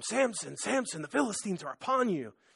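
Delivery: play-acted urgent, pressing loud yell. Retelling how Delilah wakes Samson: imitating Delilah yelling. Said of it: "she's yelling at him".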